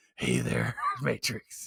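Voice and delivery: low, hushed, breathy voice, dropped near a whisper. Imagining how a gruff coach would cast a dictator role: low Nick Nolte voice. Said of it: "you get down to his low voice".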